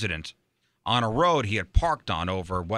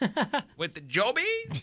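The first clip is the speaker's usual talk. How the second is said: very high, swooping, dodgy put-on British accent. Speaker jokes about how to sound British, then tries an odd British accent. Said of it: "An interesting take on a British accent there".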